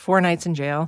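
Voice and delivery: quick, rattled-off, no lingering. Contrasting two ways of telling Anna's jail nights, first said fast. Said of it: "I can say it fast".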